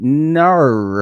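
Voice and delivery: put-on Australian accent, no said as 'nar'. Showing how Australians say no, with an Australian 'nar' for no. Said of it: "very familiar with the Australian nar".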